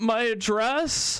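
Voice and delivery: mock unsure, nervous, high voice. Retelling an answer to a cop pointing at a license: imitating own nervous question. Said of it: "I was just so nervous".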